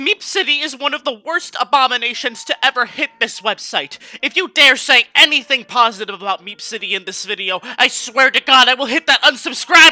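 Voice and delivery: very loud, shrill, furious, outraged rant. A video host imitates a viewer attitude he is mocking: mocking an angry hater. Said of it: "I'm mocking this mentality".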